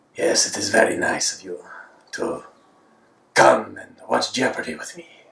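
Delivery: English spoken with a Spanish accent. Using the voice they resort to for Spanish, doing an Antonio Banderas Spanish accent. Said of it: "So with a Spanish accent, I'll say".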